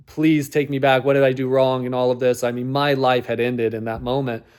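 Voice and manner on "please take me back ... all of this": mock sobbing, tearful, pleading voice. Retelling being broken up with at the door while the mom watched TV: retelling tearful pleading. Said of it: "bawling my eyes out and like pleading".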